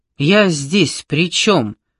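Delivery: shrewd, perceptive exclaiming. Narrator reads an old woman's retort to the narrator, shrewd exclamation. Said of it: "проницательно воскликнула Горн".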